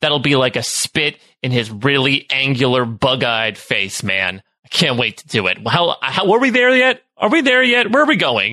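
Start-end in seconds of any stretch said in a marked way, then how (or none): 5.7-8.5 very high, rowdy shouting, over and over. Player characters lagging behind the group in a roleplay scene: yelling. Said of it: "start yelling this".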